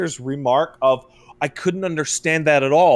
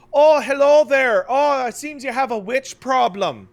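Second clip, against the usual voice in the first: put-on passable Irish accent, pitched up; 8 semitones higher than usual. Describing the same actors in a show, imitating them in an okay Irish accent. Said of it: "doing kind of okay Irish accents".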